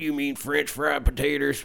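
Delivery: quiet, creaky character voice. Showing the impression they say they do best, Carl from Sling Blade. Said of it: "I do the best is Carl from Sling Blade".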